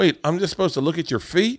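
very high-pitched put-on Southern accent. Retelling what a girlfriend said, imitating her in a Southern accent. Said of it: "I like that you gave her a Southern accent".

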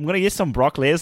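clumsy, fumbling, botched attempt at a New Zealand accent. Imitating how a friend says broccoli: botched Zach Perna accent. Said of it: "I botched the accent".

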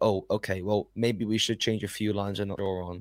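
ordinary talk, nothing marked

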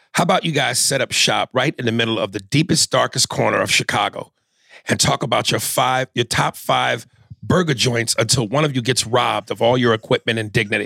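normal talking voice

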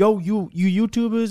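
high, loud hollering beach hustler call.

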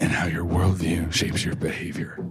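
soft, whispered, dramatic narrating voice. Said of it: "reading it like a young adult graphic novel".

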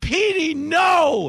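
high, loud, desperate panicked yell.

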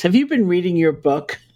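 mock reproachful, blaming, pointed accusing tone. Quoting a woman who broke a silence, in a mock-accusing voice. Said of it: "in this kind of accusing voice".

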